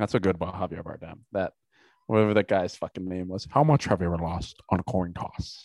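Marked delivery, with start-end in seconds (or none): 3.5-5.7 thick, mushy mumble, as through a full mouth. Quoting a film villain's line, the speaker does a Javier Bardem mumbling impression. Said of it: "talks like he's got peanut butter in his mouth".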